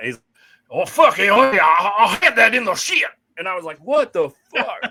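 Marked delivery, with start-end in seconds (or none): 0.7-3.0 put-on Cajun accent, higher and louder. Retelling how he broke out in Cajun after not winning, imitating a Cajun accent. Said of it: "he just busts out this Cajun".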